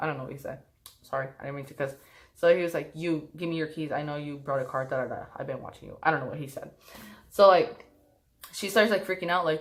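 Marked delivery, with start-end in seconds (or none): 2.9-6.0 put-on sarcastic tone, quieter. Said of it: "he was being, like, sarcastic".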